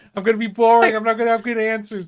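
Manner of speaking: mock nervous whining. Teasing a guest about being nervous before the interview: imitating someone nervous. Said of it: "You were so nervous, being like".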